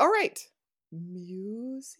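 spooky, eerie haunted-house voice. Podcast host introducing the next segment in a spooky Haunted Mansion-like voice. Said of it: "you sounded like you were, I don't know, at the Haunted Mansion".

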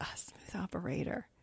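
quiet whisper.

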